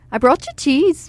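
put-on Minnesota Midwestern accent. Imitating an aunt from Minnesota who always talks like this, Minnesota accent. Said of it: "She always talks like this".

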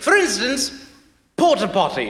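high-class British accent. Showing why accents are fun, the speaker says a word in high-class british accent. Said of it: "in a high-class British accent".

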